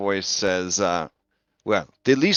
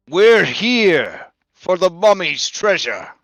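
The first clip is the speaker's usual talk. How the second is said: booming, high feminine voice calling across; 8 semitones higher, 4 dB louder than usual. Game master voicing a figure calling to the players from the south: booming feminine voice. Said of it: "a booming feminine voice calls to you".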